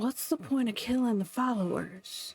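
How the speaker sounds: quiet whispering. Kneeling with fingers in the dirt, asking a question: whispering. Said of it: "I kinda whisper".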